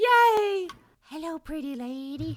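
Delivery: slow sleazy voice. Imagining what a pervert would say after a dance: acting out a pervert. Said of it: "the escalation of a pervert like that, where they go".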